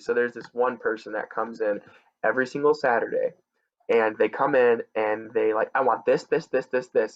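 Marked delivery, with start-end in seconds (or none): 5.7-7.2 rapid-fire, very fast rattled-off delivery with no pauses. Lottery worker retells a Saturday customer ordering, imitating a customer speaking fast. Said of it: "Says it really fast".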